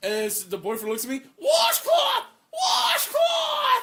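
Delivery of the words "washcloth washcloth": shrill, loud, very high-pitched yell. Retelling the moment the boyfriend looked at him: retelling a yell. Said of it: "I was just yelling washcloth".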